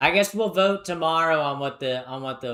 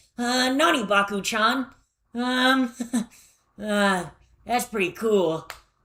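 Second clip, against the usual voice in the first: really annoying put-on anime voice, high, drawn-out; 9 semitones higher than usual. Showing what a voice changer voice would be: really annoying anime voice. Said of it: "really annoying ass anime voice".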